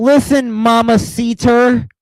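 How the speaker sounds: put-on Spanish spoken with an American accent, high pitched. Mocking Nikki Bella trying to speak Spanish: Nikki Bella gringo Spanish accent. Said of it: "She sounds like a fucking gringo".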